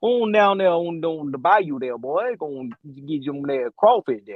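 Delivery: put-on Louisiana bayou accent. Showing how the character's Louisiana accent should sound: put-on Cajun accent. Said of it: "a Cajun".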